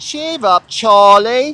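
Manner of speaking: loud, high put-on Cockney accent. Demonstrating his own Cockney accent on a phrase, put-on Cockney accent. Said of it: "That's my Cockney accent".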